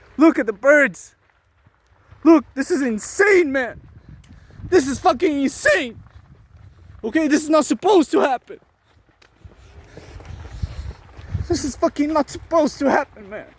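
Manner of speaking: agitated and angry. Watching birds whose nests are about to burn, angry and upset. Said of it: "I bet you can hear it in my tone".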